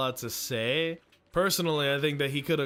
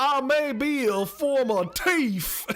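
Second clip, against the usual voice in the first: put-on Cajun accent, very high and loud; 11 semitones higher, 5 dB louder than usual. Quoting a former thief character's line, in a Cajun accent. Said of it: "because of his Cajun accent. He goes".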